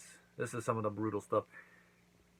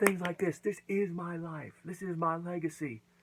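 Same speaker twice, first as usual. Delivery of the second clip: high put-on voice, lecturing tone. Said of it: "be like".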